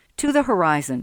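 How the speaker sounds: plain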